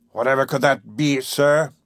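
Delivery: sarcastic, mocking tone. Reading a busy captain's retort to a visitor: sarcastic. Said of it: "he replied sarcastically".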